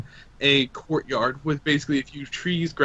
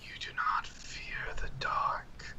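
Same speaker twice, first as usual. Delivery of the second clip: very soft, slow, drawn-out hushed whisper. Voicing a mysterious whisper that speaks to a player: whispering voice. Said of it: "you hear another whisper that says".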